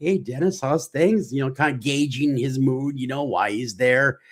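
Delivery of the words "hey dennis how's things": mock extra friendly, pitched-up nice tone. Retelling greeting a colleague at the station: retelling speaking real nice. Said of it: "real, real nice".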